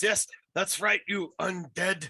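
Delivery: very loud, high, jeering mocking shout. Voicing a bard insulting an undead enemy walking away: shouting mockingly at an enemy. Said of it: "Jasper just shouts".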